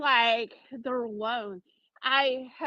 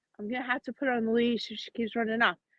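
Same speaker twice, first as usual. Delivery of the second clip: ordinary delivery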